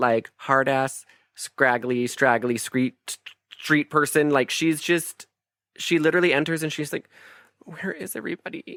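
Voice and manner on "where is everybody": put-on teary voice, quieter. Mocking an actress's performance as a tough street kid: imitating Claire Danes near tears. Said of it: "constantly on the verge to cry".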